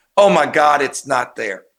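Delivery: mock frightened voice. Retelling a film scene where a character panics in the bathroom: imitating Michael's fear. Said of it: "you could just see the fear on his face".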